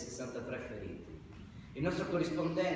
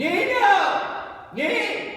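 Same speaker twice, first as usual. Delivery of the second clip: full-voiced call, very loud, high, swooping; 14 dB louder than usual. Told that a full voice is needed, calling out in a full voice. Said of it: "We need a full voice".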